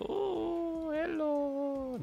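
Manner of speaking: ooh stretched out and pitched way up. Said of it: "He's like".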